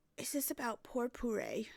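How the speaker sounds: put-on elderly woman's voice. The speaker voices a female character who is not old: old lady voice. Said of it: "I'm giving her an old lady voice".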